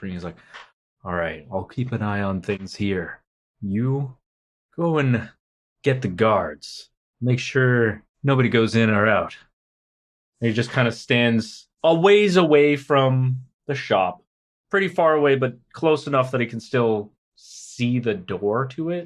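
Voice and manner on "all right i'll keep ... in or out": speaking in a whisper. Retelling a man giving orders to his companion: whispering. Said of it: "turns to Hagen and starts whispering".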